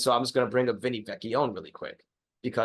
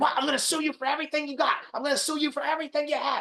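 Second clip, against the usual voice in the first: very high, furious, angry barking. Retelling someone threatening to sue the referee: imitating someone barking angrily. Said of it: "Stoney is barking at this referee".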